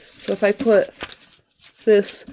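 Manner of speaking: speaking through a yawn. Showing a paper demo to viewers, talking through a yawn. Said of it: "I'm so sorry I'm yawning".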